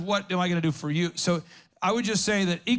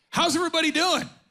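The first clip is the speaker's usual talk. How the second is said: put-on yelling, higher; 10 semitones higher than usual. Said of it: "And he's yelling at us".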